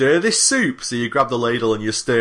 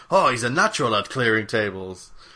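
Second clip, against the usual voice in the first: fake French accent in waiter style. Telling a table-clearing story, the speaker quotes the waiters in a put-on French accent. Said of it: "I thought that was a French accent".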